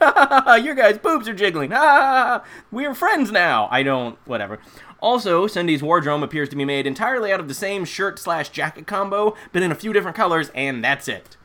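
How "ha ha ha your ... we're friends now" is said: mock high, giggly laughing through the words. Describing a scene, acting out Beth sitting on the bed, imitating Beth laughing. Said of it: "staring at them the whole time while laughing, like".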